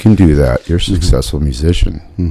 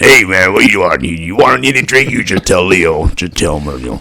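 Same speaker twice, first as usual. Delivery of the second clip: acted Italian-accented voice; 3 semitones higher than usual. An actor recalls playing the club manager at an Italian wedding show, Tino the club manager voice. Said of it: "And I talked like this".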